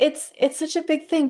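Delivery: excited, bursting out high-pitched. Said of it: "I'm getting excited here".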